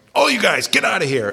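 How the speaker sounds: sudden high, loud yell.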